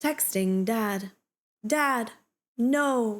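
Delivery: automated assistant voice. Trying out an automated phone assistant voice: Siri voice. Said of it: "a Siri voice".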